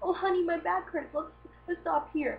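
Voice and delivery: put-on voices sounding like an elderly married couple. Retelling how a slow old couple on the sidewalk talks: imitating an old couple. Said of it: "a really old couple holding hands".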